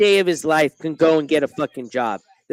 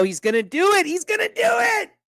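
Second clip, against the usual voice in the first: very high, rising, excited screaming. Watching someone about to show his room for a donation: screaming excitedly. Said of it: "Sorry, I'm screaming".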